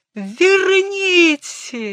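shrill, very high, wailing crying scream. A patient, after Berg calls for quiet, screaming. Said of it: "закричала больная".

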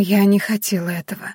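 barely audible whisper. A young woman falls to her knees and speaks in a barely audible whisper. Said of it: "едва слышно прошептала она".

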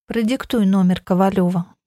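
usual speaking voice

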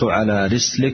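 ordinary delivery

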